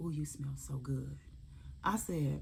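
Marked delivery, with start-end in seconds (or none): 0.0-1.2 soft, low, hushed half-whisper under the breath. Retelling what a TSA agent half-whispered to her at the checkpoint, retelling an agent's half-whisper. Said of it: "she whispers to me".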